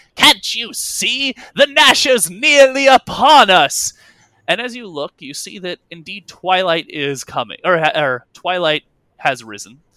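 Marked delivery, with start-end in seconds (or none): 0.2-3.9 very loud, very high, slow drawn-out shout. Narrating a scene, the captain calls down from the poop deck, shouting. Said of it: "And you hear Laristrade shouting".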